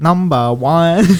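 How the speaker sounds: put-on Chinese accent on "number one". Asked to say a phrase, the speaker demonstrates it in a Chinese accent. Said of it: "make in a Chinese accent".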